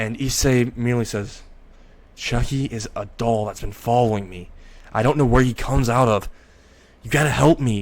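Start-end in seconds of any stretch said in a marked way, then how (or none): 2.2-7.8 begging, imploring, pleading tone. Retelling a character's plea for help: pleading voice. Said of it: "he says this in pleading voice".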